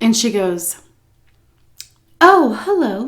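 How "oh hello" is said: sugary sweet, high voice. Retelling a visit, the speaker quotes the woman coming to the door: imitating a sweet voice. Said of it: "with like a sweet voice".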